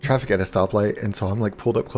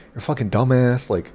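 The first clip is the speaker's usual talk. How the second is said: put-on yelling voice; 3 semitones higher than usual. Retelling a confrontation with a man who started yelling at him, imitating the yell. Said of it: "starts yelling at me".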